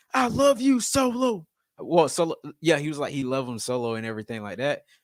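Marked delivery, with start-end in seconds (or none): 0.2-1.5 hostile aggressive voice, very high and very slow. Quoting what a man told Solo over the belt, imitating an aggressive voice. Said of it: "he said it like with a aggressive voice".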